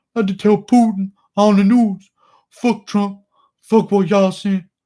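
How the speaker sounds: loud, high voice belted out like a callout. Reading a viewer's request, doing a Derek Lewis impression. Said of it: "Derek Lewis impression".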